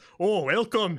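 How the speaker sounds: very loud put-on dwarvish accent. Retelling how she greeted them, Dwarvish accent. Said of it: "Oh God, that is Dwarvish".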